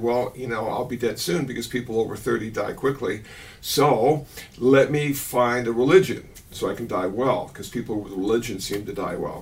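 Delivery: ordinary delivery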